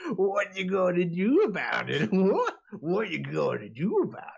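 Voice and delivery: hyena-like creature voice. Voicing Noel, a humanoid dog character, after a failed attack, laughing like a hyena. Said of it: "almost laughing like a hyena".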